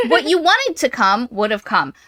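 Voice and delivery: ordinary delivery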